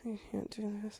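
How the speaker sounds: very quiet, barely audible acted groan. Retelling how he reacted with eyes closed: imitating someone groaning. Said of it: "groaning, literally with his eyes closed, being like".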